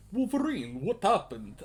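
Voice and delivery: fake Russian accent, done badly. Speaker voicing a character calling out to Wolverine, bad Russian accent. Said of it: "I apologize for my bad Russian accent".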